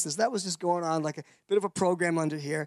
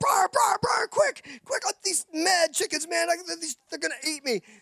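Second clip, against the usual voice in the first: very high, frantic, panicked screaming; 11 semitones higher than usual. Retelling running back to the tent from chickens: retelling own panicked screaming. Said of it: "screaming my head off".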